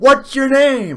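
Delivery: high-pitched yelling. Describing a woman recording on her phone, the speaker imitates her yelling. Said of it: "Like she's yelling".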